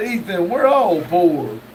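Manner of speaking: ordinary delivery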